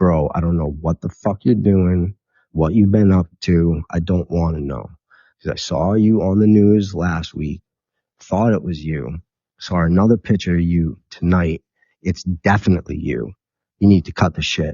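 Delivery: ordinary talk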